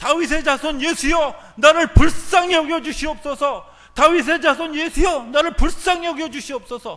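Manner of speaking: very loud, high, impassioned, fervent shout. Retelling how a man shouted to Jesus: imitating someone shouting. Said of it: "바로 뭐라고 얘기하냐면 소리를 지릅니다".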